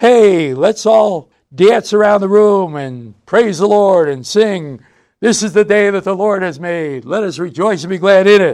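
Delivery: loud, happy, hearty voice. Giving an example of what not to say in a hospital room: loud, happy voice. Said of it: "say in a loud, happy voice".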